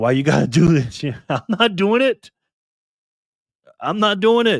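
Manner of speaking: high, tearful voice, speaking through tears. Speaking to viewers who made them feel like a celebrity: crying while talking. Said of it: "Now I'm crying".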